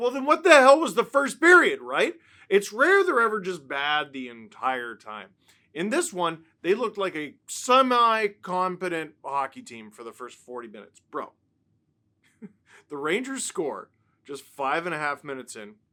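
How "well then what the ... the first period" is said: high, loud, exasperated outburst. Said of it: "you're like".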